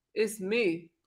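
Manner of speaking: imitated low voice. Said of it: "Don't come with that deep voice next time".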